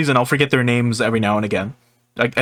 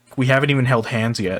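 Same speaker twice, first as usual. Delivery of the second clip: plain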